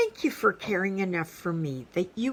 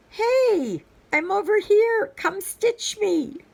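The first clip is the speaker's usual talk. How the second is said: very high, raised calling out; 6 dB louder than usual. Voicing a waiting project that wants to be stitched: louder calling voice. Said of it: "the voice gets louder".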